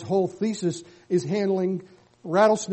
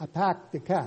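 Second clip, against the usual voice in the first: plain Boston-accented speech; 5 dB quieter than usual. Lecture on what language reveals about a speaker: boston accent. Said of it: "I'm from Boston".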